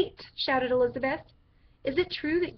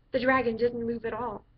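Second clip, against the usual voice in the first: ordinary delivery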